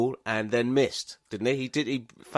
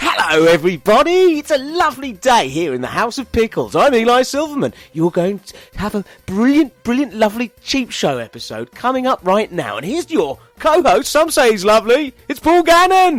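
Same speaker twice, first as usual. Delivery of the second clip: spunky, jolly host voice, very high, very loud, swooping; 10 semitones higher, 10 dB louder than usual. Redoing the show introduction after being asked for more energy: jolly, spunky host voice. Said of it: "Give me spunk".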